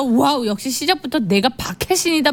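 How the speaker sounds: ordinary delivery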